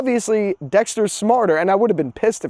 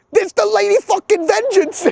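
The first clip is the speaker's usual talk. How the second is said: put-on over-the-top New York accent, very high-pitched; 13 semitones higher than usual. Retelling how he called the cops about Lady Vengeance, New Yorker impression. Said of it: "the funniest ever impression of a New Yorker".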